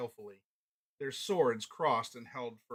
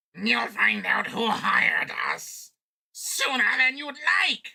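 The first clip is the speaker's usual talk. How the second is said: shrill, very high, very loud goblin snarl; 11 semitones higher, 11 dB louder than usual. Reading a story aloud, voicing a goblin's line: snarling goblin. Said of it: "snarled another goblin".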